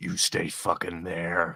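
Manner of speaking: shout-whisper. Warning a crouching figure to stay hidden: shout-whisper. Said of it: "kind of shout, whisper over to him".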